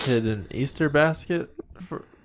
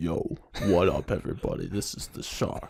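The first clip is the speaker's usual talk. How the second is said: exaggerated deep voice, lower and quieter; 6 semitones lower, 5 dB quieter than usual. Greeting everybody while boasting of the deepest voice: put-on deepest voice. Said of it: "I got the deepest voice in the studio".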